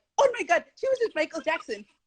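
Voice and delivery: excited, high, fast, amazed gushing. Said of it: "for them to be like".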